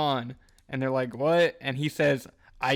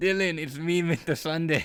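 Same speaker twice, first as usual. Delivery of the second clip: failed put-on Australian accent, higher pitch; 3 semitones higher than usual. Joking on a podcast as Mister Sunday greeting Dylan, in a bad Australian accent. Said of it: "That is not an Australian accent".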